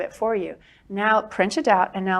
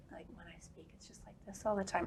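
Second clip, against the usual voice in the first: hushed, barely-there, very quiet near-whisper; 20 dB quieter than usual. Talking about improving speech, the speaker demonstrates a habit to work on: very quiet voice. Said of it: "it's very quiet".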